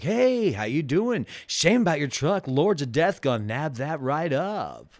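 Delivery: bland, plain, flat-sounding voice. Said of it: "he has I would say the whitest voice".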